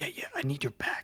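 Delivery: speaking in a whisper. Asking a sleeping-party companion for help carrying something: whispering. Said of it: "Why are we whispering?".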